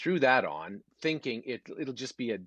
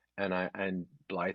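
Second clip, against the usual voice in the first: ordinary delivery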